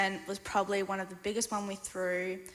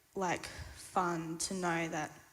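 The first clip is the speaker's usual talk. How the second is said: plain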